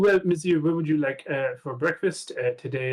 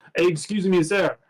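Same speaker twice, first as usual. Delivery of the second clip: put-on French waiter voice, higher pitch; 3 semitones higher than usual. Voicing a waiter approaching a player in the dining car: French waiter voice. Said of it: "a French waiter who goes".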